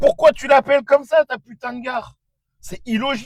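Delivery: high, loud, exasperated outburst.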